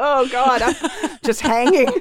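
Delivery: high, drawn-out, aching wail of pain. Retelling balancing up high on a bicycle seat: imitating own pained cry. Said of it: "in total pain".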